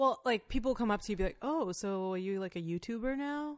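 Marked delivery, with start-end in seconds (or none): 1.4-3.6 play-acted, patronising, belittling, condescending tone. Retelling what people ask on meeting the speaker: imitating a condescending tone. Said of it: "almost in a condescending kinda way".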